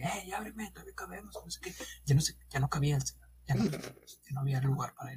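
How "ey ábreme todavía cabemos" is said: acted-out high, pitched-up yell. Retelling a bus passenger locked out, yelling at the driver: imitating a man yelling. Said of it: "le empezó a gritar al chofer que".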